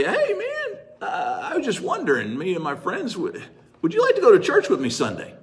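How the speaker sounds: timid, halting, sheepish voice with swooping pitch. Retelling walking up behind a man at the airport to invite him, imitating own sheepish voice. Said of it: "in a sheepish voice".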